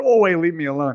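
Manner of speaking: normal talking voice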